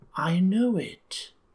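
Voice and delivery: half-whispered words. Narrator reads an unseen voice speaking from the darkness, half-whispered. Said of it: "whispers a voice".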